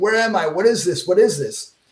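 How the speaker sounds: acted, crying, tearful, terrified begging. Retelling a terrifying ceremony, pleading while crying: retelling crying in terror. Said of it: "And I was crying".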